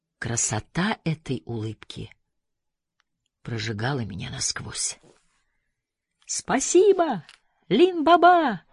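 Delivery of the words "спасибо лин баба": glad, joyful, very high-pitched shout. After the narrator swears the oath, he calls out to the narrator: joyful shout. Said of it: "крикнул он радостно".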